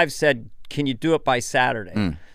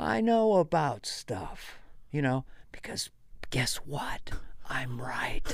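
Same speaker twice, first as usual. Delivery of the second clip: soft, condescending, patronizing know-it-all whisper; 12 dB quieter than usual. Describing their father when older, imitating Joe's patronizing whisper. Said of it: "my father used to do the patronizing whisper".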